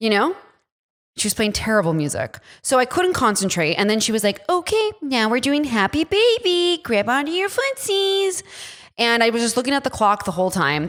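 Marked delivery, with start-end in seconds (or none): 4.5-8.4 put-on very high, slow baby-talk voice. Retelling a Pilates class, imitating the instructor: imitating a baby voice. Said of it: "the instructor talked in baby voice".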